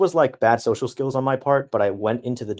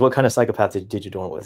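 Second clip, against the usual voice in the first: ordinary delivery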